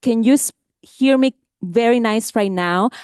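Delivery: plain, normal speaking voice. Showing an audience how to speak up even with a microphone, raised voice. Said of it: "I'm kind of raising my voice".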